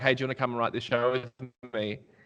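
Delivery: mock breezy, casual, offhand tone. Retelling how a showrunner invited them to write, imitating a casual offhand ask. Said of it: "the tone of how he asked me".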